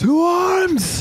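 shrill alarmed shout at full volume, drawn out. Voicing a soldier raising the alarm: shouting at the top of his lungs. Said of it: "shouts at the top of his lungs".

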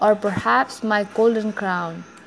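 ordinary talk

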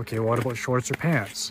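normal talking voice

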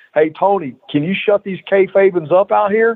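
high, mild, good-natured yell, kept light. Retelling how a man screamed in the ring over heckling fans, retelling a scream. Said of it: "he screams at the top of his lungs".

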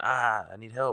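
slow, drawn-out yelling cry. Retelling how a shot kid ran into a hospital, retelling a yell for help. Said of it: "he starts yelling".

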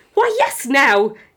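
very loud, high, excited near-yell. Urging a groggy man on the phone to meet up right now, almost yelling in excitement. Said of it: "You almost yell in excitement".

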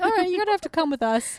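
high, quick, calm official-sounding voice. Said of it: "they just very calmly were like".

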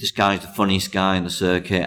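normal talking voice

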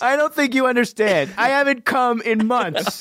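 mock desperate whine, high-pitched and pleading.

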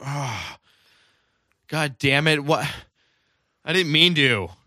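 very loud, cranky, grouchy outburst. Acting out a guy's reaction to being woken up, mock-cranky just-woken guy. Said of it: "He's all cranky because he got woken up".

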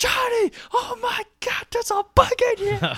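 very high, loud, drawn-out shrieking scream. Retelling how his wife reacted to a buzzing bug, imitating wife screaming. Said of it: "hear my wife screaming like".

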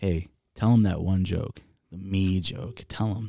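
ordinary talk

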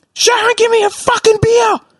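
exaggerated, very high, broad Aussie bogan accent. Retelling how he called out to Sharon, in an exaggerated Aussie bogan accent. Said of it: "I pulled out the most Aussie bogan accent".

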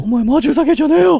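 falsetto, angry tone. Trying out how an angry remark sounds in falsetto: angry line in falsetto. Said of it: "裏声で言ったら、".

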